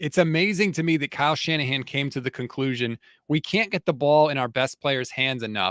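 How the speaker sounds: plain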